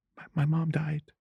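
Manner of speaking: put-on, high, tearful sobbing. Retelling pretending to cry at bedtime to stop others talking: retelling fake crying. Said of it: "So I started crying".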